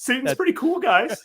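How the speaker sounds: put-on meme dog voice. Acting out the devil dog's lines in the talking dog meme voice. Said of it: "he was doing that voice".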